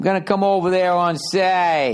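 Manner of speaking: over-the-top, exaggerated drunk Boston accent, say drawn out. Showing how Boston drunks talk, in an exaggerated Boston drunk accent. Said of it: "it's an exaggeration of Saturday".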